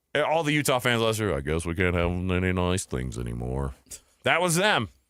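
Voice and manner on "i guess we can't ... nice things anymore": low-pitched cartoon donkey voice. Imitating Utah fans complaining about last season: Eeyore voice. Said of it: "the Eeyore voice".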